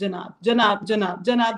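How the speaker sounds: ordinary delivery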